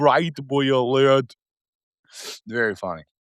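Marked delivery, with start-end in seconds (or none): 0.0-1.4 mangled, botched delivery, as if unable to say it. Showing how Arnold could not say a movie line: Arnold mangling a line. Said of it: "he could not say, he goes".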